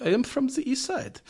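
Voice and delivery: put-on odd, weird, very high-pitched Eastern European accent. Retelling what a movie character said when asked where he's from: weird eastern european accent. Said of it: "Weird accent".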